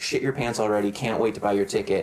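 ordinary talk, nothing marked

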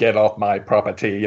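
slow, dead-flat, robotic monotone. Describing a talking paintball marker at the door, in the Terminator voice. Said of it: "in the Terminator voice".

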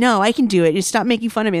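mock crying, high, tearful and defiant. Retelling a scene where she is mocked and fights back: imitating someone crying while protesting. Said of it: "crying and".

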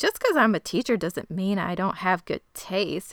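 mock indignant, offended, defensive teacher voice. Retelling how a teacher answered a student's remark, as a mock-offended teacher. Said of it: "she's all offended".

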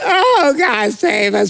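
very slow, high, drawn-out whiny voice. Speaker contrasts ways of crying out to God, mock whining. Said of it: "crying and whining".

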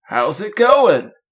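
put-on old man voice. Performing a greeting as a listener then praises it, old man impression. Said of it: "Spot on old man impression".

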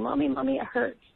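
mock tearful, high crying voice of a hurt child. Retelling what her hurt child said on the staircase: imitating Ansley crying. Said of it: "was crying".

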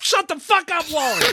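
mock very high, furious, fed-up outburst. Retelling snapping at someone who popped in mid-game: imitating own angry outburst. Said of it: "I was getting pretty frustrated".

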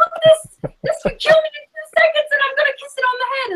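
acted, very high, wild, excited Australian screaming. Praising how he got people excited about wildlife, speaker imitates excited Australian screaming. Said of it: "this Australian guy screaming across the room".

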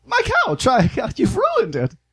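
very high housewife voice, pitch swooping around. Player narrating a game scene voices June, in June's 1950s housewife voice. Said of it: "50s housewife, is like".

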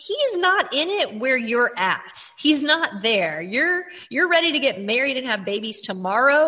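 ordinary talk, nothing marked

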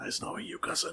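breathy, unvoiced whispered words. Voicing a parting line as a character walks out: whispered. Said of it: "just a whispered".

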